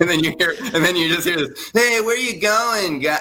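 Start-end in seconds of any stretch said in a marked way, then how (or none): 1.7-3.2 put-on Boston-accented speech. Imitate what you hear a man say on a record, in a weird Boston, Connecticut accent. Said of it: "he's got that weird Boston, Connecticut accent".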